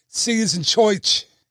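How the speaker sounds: slow, bad put-on New York gangster accent. Ride's gangster animatronic telling his buddies see you: bad New York gangster accent. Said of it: "I'm horrible at that accent".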